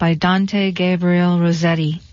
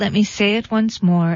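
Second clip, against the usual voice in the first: ordinary delivery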